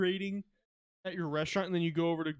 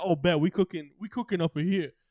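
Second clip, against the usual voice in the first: put-on rat voice, louder; 5 dB louder than usual. Imagining the rat Remy thrown in Compton: Remy voice. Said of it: "Remy, you could throw him in Compton, he'd be like".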